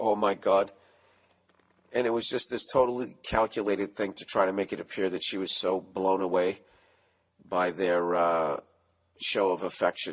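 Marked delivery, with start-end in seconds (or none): 0.0-0.7 put-on whisper, lower pitched. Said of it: "then she would whisper".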